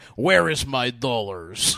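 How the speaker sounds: clumsy, bad American accent with foreign sound. Retelling how a cousin did an impression of an American: cousin's American accent impression. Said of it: "That was his American".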